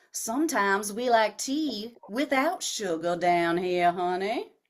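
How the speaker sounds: put-on Southern American accent. Asked to do that one again, give a Southern accent. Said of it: "what [name] did was a Southern accent".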